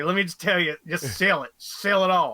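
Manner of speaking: put-on folksy old country man voice. Quoting a man, the speaker puts on an old redneck voice. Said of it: "he sounds like an old redneck".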